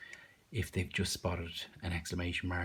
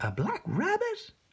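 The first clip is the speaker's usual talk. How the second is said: bright, excited reading, very high and loud; 6 dB louder than usual. Showing how to read aloud with expression, the speaker reads a phrase in an excited voice. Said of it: "we'll go for like excited".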